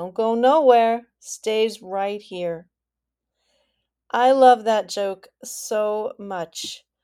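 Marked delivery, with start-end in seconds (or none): 0.0-2.7 put-on Maine accent used with an ironic tone. Telling a joke, you give the Mainer's answer to a man asking about the road, in an ironic Maine accent. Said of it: "with the perfect, ironic accent".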